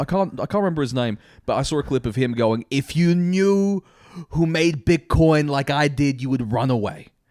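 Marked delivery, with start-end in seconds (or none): 2.7-7.0 put-on slow, older man's sort-of New York accent. Acting out an older dude from a clip talking about Bitcoin, sort of a New York accent. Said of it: "he speaks in like sort of like a New York accent".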